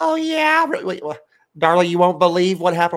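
loud, obnoxious, yakking chatter in a woman's voice. Mocking a lady at games who is always on her phone: imitating a lady on her phone. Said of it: "a lady on, on our side that's, uh, always on her phone, just like".

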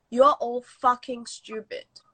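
ordinary talk

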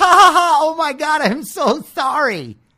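mock, drawn-out, very high, spaced-out giggling. Mocking hippies who bump into people: imitating a laughing hippie. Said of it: "bumping into people and then laughing like".

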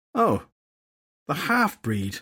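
dripping with open disgust, swooping tone. Nemain recognizes the fairy detective Filthy Henry, disgusted. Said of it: "disgust in her tone".

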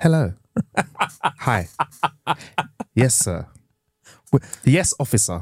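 thick put-on British accent. Role-playing a traveler at passport control, answering the officer, strong British accent. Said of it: "I'm giving it strong British".

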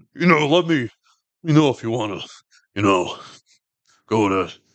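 put-on cool, laid-back voice. Speaker recapping an episode imitates a character who is now a cop; imitating a cool voice. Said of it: "He has such a cool voice".

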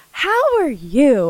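put-on eager, heartfelt, excited, earnest tone. Retelling a hotel clerk's greeting in the South: imitating an earnest greeting. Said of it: "the earnestness of her voice".

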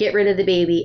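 ordinary talk, nothing marked

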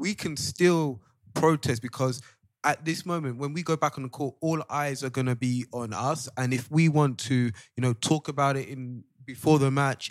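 loud, shouting preacher voice. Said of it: "why are you shouting for".

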